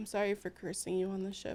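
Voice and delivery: very quiet, hushed, barely-there voice. Playing a character apologizing in a blanket fort: very quiet voice. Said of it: "she just very quietly goes".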